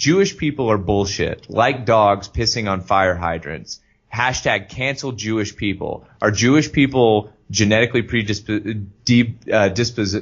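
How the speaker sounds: plain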